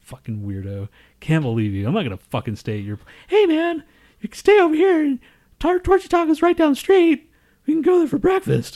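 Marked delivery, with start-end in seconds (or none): 3.3-8.8 very high, loud, put-on cartoon mouse voice. Mid-banter, impersonating a cartoon character: Mickey Mouse voice. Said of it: "that was like my impression of Mickey Mouse".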